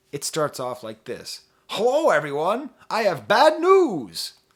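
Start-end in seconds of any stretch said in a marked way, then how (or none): 1.6-4.3 high, booming, loud, slow cartoon professor voice. Reading the opening of a goodbye letter aloud: Professor Farnsworth voice. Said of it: "in the Hubert J. Farnsworth voice".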